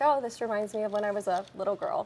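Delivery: normal talking voice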